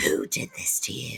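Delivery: low, deep, hushed menacing voice, near a whisper. Retelling a character's line from a scene, mock-menacing deep voice. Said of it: "can't do a deep menacing voice".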